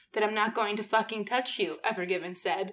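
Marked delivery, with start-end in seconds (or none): none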